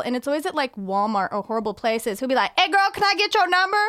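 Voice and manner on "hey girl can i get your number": loud, high-pitched hollered yell. The speaker retells how he shouts to her across Walmart, imitating someone yelling. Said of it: "But he'll like yell".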